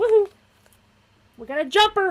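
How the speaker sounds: shrill, very loud, high excited yell and whoop. Reacting to a jumper card while drawing cards: yelling into the microphone. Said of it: "Sorry if I just yelled into the microphone".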